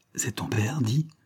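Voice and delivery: hushed whisper. Tugging on Marianne's skirt, Angèle speaks to her, whispered. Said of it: "chuchota Angèle".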